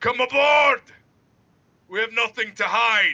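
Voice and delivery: high, loud, hailing shout.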